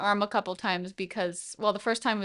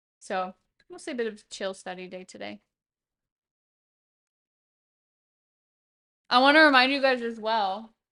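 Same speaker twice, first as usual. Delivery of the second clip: speaking with mouth full of food. Chatting to you guys during a chill study day, talking with mouth full. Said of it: "with my mouth full of food".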